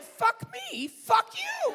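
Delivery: booming, high, shrill yell, each word stretched. Retelling a staged argument with Lynn Redgrave in front of the cast: imitating own past yelling. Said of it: "start yelling".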